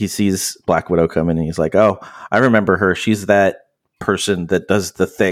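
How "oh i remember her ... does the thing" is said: ordinary talk, nothing marked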